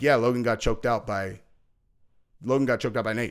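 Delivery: acted, dry, level, flat deadpan delivery. Mocking people who pretend not to know, imitating deadpan delivery. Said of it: "they're just deadpan".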